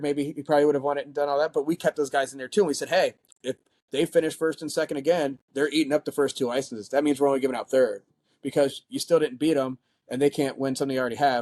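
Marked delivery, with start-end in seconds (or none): none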